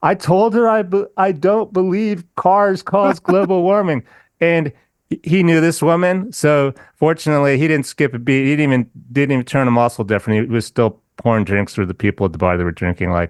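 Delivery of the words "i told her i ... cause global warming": slow, drawn-out, pitched-up yell. Retelling how he answered by calling out to the bartender: retelling his own yell. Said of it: "so I yelled to the bartender".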